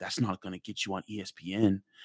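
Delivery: hushed, soft, under-the-breath half-whisper. Retelling what a coach half-whispered behind a player: imitating a half-whisper.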